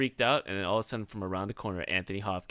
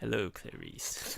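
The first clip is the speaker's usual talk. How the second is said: soft, breathy near-whisper; 7 dB quieter than usual. Imitating a famous villain's line in his bit: Anthony Hopkins as Hannibal Lecter. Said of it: "his, like, fucking Hannibal Lecter bit".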